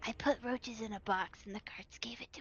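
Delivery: hushed whisper. Telling a secret in character after pulling someone close: whispering. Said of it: "I gotta whisper just in case ears".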